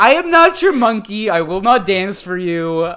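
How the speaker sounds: loud big-top ringmaster proclaiming voice. Imitating Lindsay after being asked: imitating a circus ringleader voice. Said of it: "Can you do the circus ringleader impersonation one more time".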